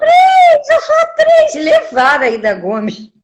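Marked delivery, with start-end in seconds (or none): 0.0-1.5 high, loud screaming protest. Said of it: "E ela gritava".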